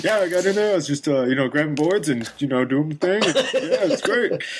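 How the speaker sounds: loose rambling crazy-man voice. Imitating Hasbro describing his play: Hasbro impression. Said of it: "a really good Hasbro impression".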